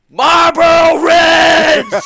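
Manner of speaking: very loud, very high-pitched screaming. Retelling a story about a man at a travel agency counter, imitating him screaming. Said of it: "he's like sitting there just screaming".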